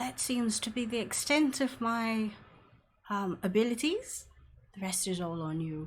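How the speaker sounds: secretive stage whisper, slow and drawn out. Playing a character in a tabletop game, speaking in a half-whisper. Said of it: "I come out and close the door and I whisper".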